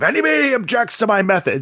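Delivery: put-on held-back anger. Retelling a character at a hearing with his neck vein bulging: imitating barely held-back anger. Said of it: "the vein, like, bulging out of his neck".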